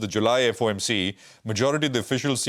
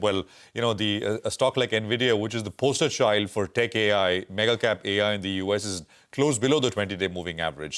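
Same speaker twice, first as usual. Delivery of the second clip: usual speaking voice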